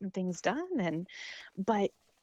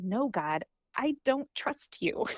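mock angry, loud outburst; 4 semitones higher than usual. Retelling their reply to god's question, speaker acts it out: retelling an angry reply. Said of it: "responded out loud in an angry voice".

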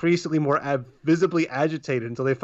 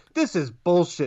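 low-key, blurted, mock yelling outburst; 3 semitones higher than usual. Retelling how a guy stood up during a movie: imitating someone yelling. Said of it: "just stands up and yells".

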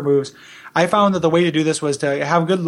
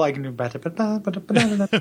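fast mouth-made dance rhythm sound. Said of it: "I was gonna sing that with my mouth".

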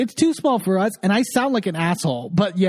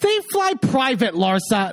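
mock utterly exasperated, fed-up tone; 4 semitones higher than usual. Retelling what a producer said to a cast member: imitating exasperated producer. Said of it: "so exasperated".

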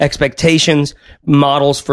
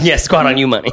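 normal talking voice

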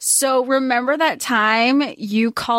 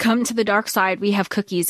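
mock-ominous voice; 3 semitones lower than usual. Describing how a character tempts others, in a mock-ominous voice. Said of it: "he says it in such an ominous way".

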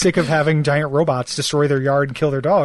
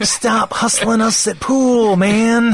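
put-on teenage dirtbag voice, higher; 7 semitones higher, 3 dB louder than usual.

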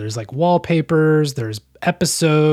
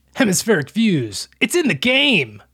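high, swooping, put-on American accent; 6 semitones higher than usual. Imitating a video game's startup announcement: american accent. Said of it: "He's got that American accent down pat".

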